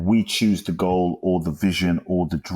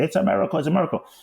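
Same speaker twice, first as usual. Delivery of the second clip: mock ecstatic shrieking, very high-pitched; 11 semitones higher than usual. Retelling jumping around after a miracle phone call: retelling own excited screaming.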